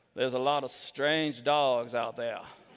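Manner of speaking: put-on very heavy Southern accent, pitched far down low. Retelling what an audience member said, in his deep southern accent. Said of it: "He had a very deep Southern accent. I'm going to I'm going to just do it".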